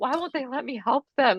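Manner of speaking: crying, high-pitched, tearful pleading. Retelling asking a wife why they won't let her help: imitating own past crying.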